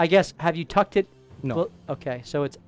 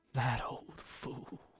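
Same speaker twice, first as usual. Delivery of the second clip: muttered under breath, much quieter and slower; 3 semitones lower, 16 dB quieter than usual. A narrator voices a man who grabs a necklace: muttered under his breath. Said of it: "kind of under his breath".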